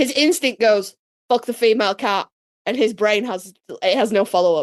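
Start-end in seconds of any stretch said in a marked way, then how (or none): none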